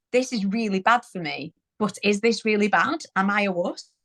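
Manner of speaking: ordinary talk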